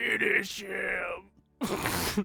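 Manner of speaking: gurgling, gargled voice. Speaking in character while wounded: gurgling voice. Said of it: "in a gurgling, like".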